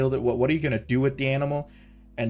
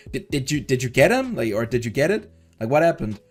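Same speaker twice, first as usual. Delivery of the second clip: ordinary talk, nothing marked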